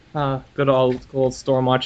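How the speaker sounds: ordinary talk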